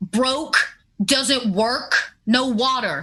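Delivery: slightly irritated and upset. Voicing a woman answering a question from a boy: a little angry and upset. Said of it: "a little angry and upset".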